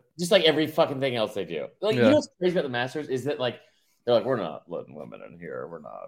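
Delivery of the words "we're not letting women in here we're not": very deep, very low, very soft hushed voice. Riffing about the Masters, doing the Belichick voice. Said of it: "I'm doing like the Belichick voice with it".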